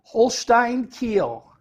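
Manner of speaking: Holstein Kiel said with real German accent. Asked on a betting show to say the team's name again, German accent. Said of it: "he's got the real German accent".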